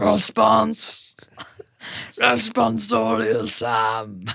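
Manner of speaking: rough, raspy, guttural put-on priest voice, drawn-out "Sam". Answering a mock sermon reading: guttural put-on priest voice. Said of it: "What is that voice?".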